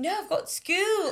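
very high, slow, soft, put-on British accent. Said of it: "Do your best British accent".

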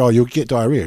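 normal talking voice

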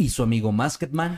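storyteller narrator voice. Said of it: "con voz de narrador".

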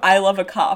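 usual speaking voice

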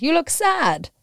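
put-on pretty terrible Italian accent, very high and loud. Retelling what a man said when the speaker walked into a pottery studio, pretty terrible Italian accent. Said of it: "pretty terrible Italian accent".

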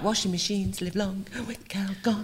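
soft, whispered advert announcer voice. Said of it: "I was trying to do that".

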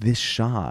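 ordinary talk

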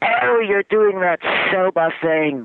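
mock very high, shrill, loud yell. Recounting a man yelling at them from across the room, imitating someone yelling. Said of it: "he points across the room and he yells".

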